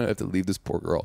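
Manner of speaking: put-on voice of a scared man. Imitating a scared big man who doesn't know what to do: imitating scared Kenny. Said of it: "but he's so like".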